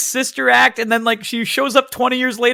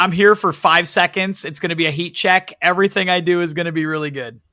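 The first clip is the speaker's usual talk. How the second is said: ordinary delivery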